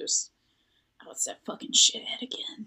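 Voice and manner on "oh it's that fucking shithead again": hushed whisper, higher. Whispering in character to another player about a locket: whispering. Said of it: "I just whisper that back to Troy".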